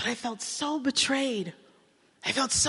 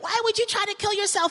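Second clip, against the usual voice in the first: put-on sharp, high-pitched berating; 8 semitones higher, 3 dB louder than usual. Retelling driving her to the hospital after she tried to kill herself, berating her. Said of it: "I'm berating her".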